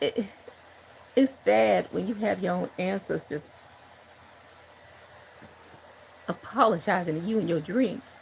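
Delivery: trying not to cry, holding back tears. Speaker talking about praying and dream visitations, holding back tears. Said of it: "I'm trying not to cry".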